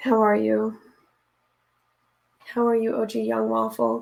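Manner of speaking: raspy, scratchy, hoarse voice. Greeting someone after reading children's books aloud all day, raspy voice. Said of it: "And my voice is so raspy".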